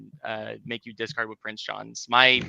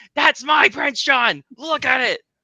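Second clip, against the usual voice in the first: shrill screaming pitched very high; 14 semitones higher, 8 dB louder than usual. Recalling a video of self seeing own name on a stream: retelling own screaming. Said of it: "screaming at the TV and going".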